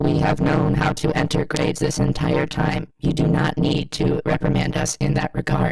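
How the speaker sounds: robotic, machine-like delivery. Mock-replying to a disrespectful email, in a robotic teacher voice. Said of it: "the robot teacher voice".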